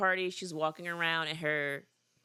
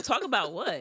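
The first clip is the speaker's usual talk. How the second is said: acted confused tone, higher; 4 semitones higher, 3 dB louder than usual. Retelling her reply to his offer to talk: imitating confused questioning. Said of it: "honestly confused".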